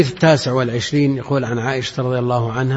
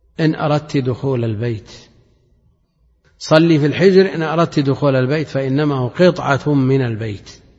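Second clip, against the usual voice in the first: plain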